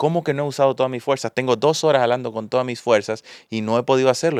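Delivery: normal talking voice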